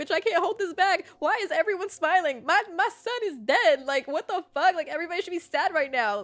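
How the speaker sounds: put-on, high, tearful crying outburst. Retelling own words while crying in public at the grocery store: retelling own crying outburst. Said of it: "crying in public, and I'm like".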